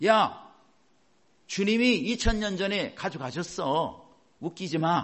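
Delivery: mocking, scornful scoff.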